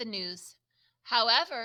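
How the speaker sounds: plain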